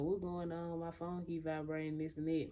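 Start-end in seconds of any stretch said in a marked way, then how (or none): none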